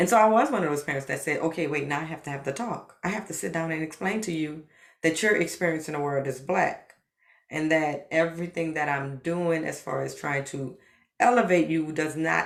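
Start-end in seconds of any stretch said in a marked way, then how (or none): none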